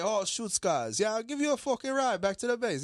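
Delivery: local pidgin, surfer style. Retelling how the locals talked when offering a ride, in a pidgin accent. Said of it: "they talk pigeon".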